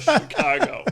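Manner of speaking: high, loud mocking shout.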